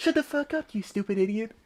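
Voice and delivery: muttering, mumbled under his breath. Pretending to insult the construction workers outside: muttering under his breath. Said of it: "Under his breath".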